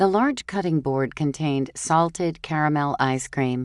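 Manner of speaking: plain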